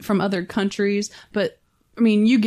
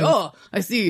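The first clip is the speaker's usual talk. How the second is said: put-on poorly done Quebec accent. As if you're retelling a film scene and mimicking the actor's clumsy accent, exaggerating his dumbfounded, casual discovery of something awful. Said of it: "with his bad Quebec accent".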